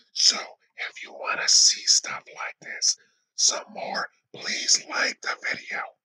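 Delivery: hushed whisper. Host opening a live show on a sensitive topic: whispering. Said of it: "I'm whispering because".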